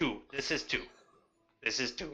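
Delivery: fake, put-on Russian accent. Playing a tiefling character talking with the group: put-on Russian accent. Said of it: "How come all tieflings are Russian?".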